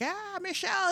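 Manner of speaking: sloppy, slurred, acted drunk voice, pitched high. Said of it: "he was so drunk that whole day".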